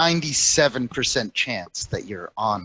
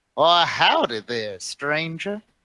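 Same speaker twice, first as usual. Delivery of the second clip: put-on elderly man voice, somewhat higher; 5 semitones higher than usual. Voicing an old man at the edge of town: old man character voice. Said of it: "an old man sitting at the edge of town".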